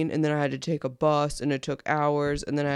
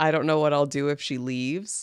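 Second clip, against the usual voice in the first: normal talking voice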